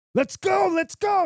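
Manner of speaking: very high, restless, impatient yell. Telling how an impatient group member yelled while waiting, retelling a yell. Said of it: "he's yelling".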